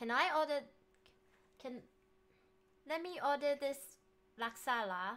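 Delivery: speaking with Malaysian accent. Trying to order food in English with a put-on Malaysian accent. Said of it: "like English but Malaysian".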